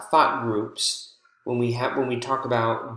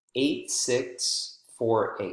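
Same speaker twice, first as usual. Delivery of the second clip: short break after six, before four; 3 dB quieter than usual. Reading a phone number in thought groups: brief pause between six and four. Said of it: "there is a brief pause there between the six and the four".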